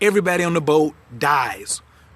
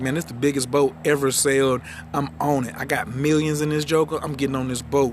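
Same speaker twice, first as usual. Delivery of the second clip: ordinary talk, nothing marked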